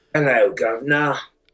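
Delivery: stock cockney-style British accent. Listing variants of British accents with co-hosts, stereotypical British accent. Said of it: "stereotypical British accents".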